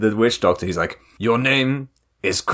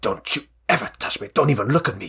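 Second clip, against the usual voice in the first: put-on angry outburst, losing it. Retelling a film scene where a husband loses it at his wife: imitating someone losing it angrily. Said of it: "he just immediately loses it at her".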